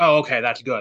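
relieved tone of voice. Retelling a man's reply about bedtime: imitating a relieved tone. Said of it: "the relief in his voice".

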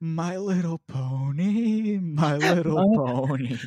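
very slow creepy voice. Joking about what someone hears while lying in their tent: put-on creepy voice. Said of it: "just a creepy voice saying".

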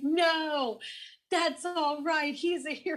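imitated crowd yelling. Retelling how bystanders yelled at a veteran to stop, retelling people yelling. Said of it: "they're yelling at an actual war veteran".

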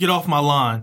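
put-on, mock grumpy old man voice. Joking about turning grumpy, putting on a grumpy old man voice. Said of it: "a reference from being an old grumpy dude".

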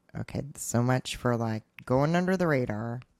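ordinary talk

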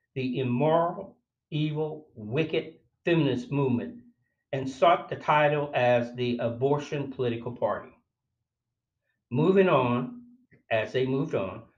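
ordinary talk, nothing marked

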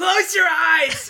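very loud, very high shouted call, in character voice. Shouting in character to a panicking crowd of children. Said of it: "I'm gonna say".

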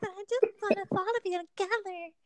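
put-on very high, breathy, sweet little girl voice. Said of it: "Is that the voice?".

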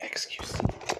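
unvoiced whispered letters.

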